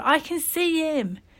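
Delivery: high, drawn-out shout of sheer terror. A boy shouts to the other boys on the steps, shouting in terror. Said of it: "he shouted, eyes wide with terror".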